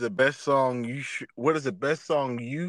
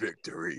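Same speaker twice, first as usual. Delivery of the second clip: acted, soft, sultry, seductive single word; 5 semitones higher, 9 dB quieter than usual. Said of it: "and just be like".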